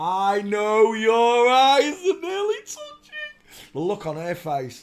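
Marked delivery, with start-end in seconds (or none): 0.0-3.7 put-on very slow, loud, drawn-out sing-song Geordie accent. Retelling Mickey's line in a live chat: imitating Mickey's Geordie accent. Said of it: "all you hear is a Geordie accent going".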